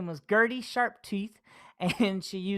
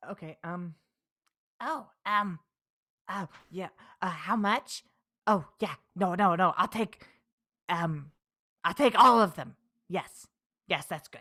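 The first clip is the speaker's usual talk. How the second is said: little scratchy, hoarse, raspy goblin creature voice. Improvising a scene with a pushy burrito salesman, in a raspy goblin voice. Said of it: "that would be the goblin voice".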